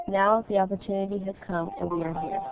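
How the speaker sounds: normal talking voice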